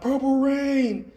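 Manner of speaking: high, slow, drawn-out mock yell like a crowd member. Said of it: "some guy yells out".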